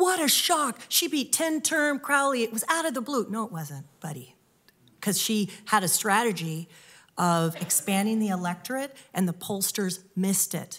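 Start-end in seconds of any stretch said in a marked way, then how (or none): 0.0-3.3 high, gasping, feigned astonishment. Speaker mimics people's reaction to a surprise win; mock-shocked.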